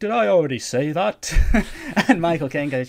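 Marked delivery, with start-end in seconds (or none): 0.0-1.3 put-on loud, high, forgetful old ghost voice. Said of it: "the Ghost of Christmas Present goes".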